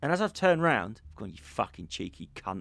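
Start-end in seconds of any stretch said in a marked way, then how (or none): 1.3-2.6 put-on under-breath mutter, much quieter, lower. Speaker retells turning round on him, re-enacting muttering under their breath. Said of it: "Sort of under my breath, but so he could hear me".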